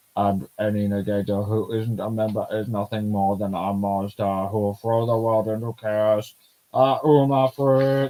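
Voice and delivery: robotic, mechanical, machine-like robot voice. Reading a manga character's line aloud: robot voice. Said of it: "Try and do a robot voice here".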